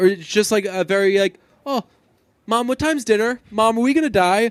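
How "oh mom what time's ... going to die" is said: put-on calm, offhand, unbothered little girl voice, pitched up. Retelling the child's line as if asking about dinner: imitating a casual calm child. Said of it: "she very calmly says to her mother".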